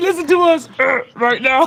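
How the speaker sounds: awkward, clumsy, dopey-sounding character voice. Repeating another speaker's character line: imitating an awkward, dumb-sounding voice. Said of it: "He said".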